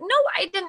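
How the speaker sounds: exasperated, protesting tone.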